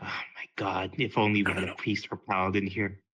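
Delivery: low mutter under the breath, aside. Playing a character near Flynn, wishing for a priest: muttering under breath. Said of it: "I kinda mutter under my breath".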